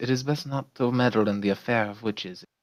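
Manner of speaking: whispering. A player speaks in character to the group: whispering. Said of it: "I whisper this".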